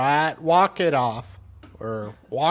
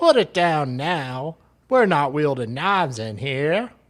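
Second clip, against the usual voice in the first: put-on Australian police officer's accent. Acting out a senior constable's lines from a news story: Aussie accent. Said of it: "I have to work on your Aussie accent".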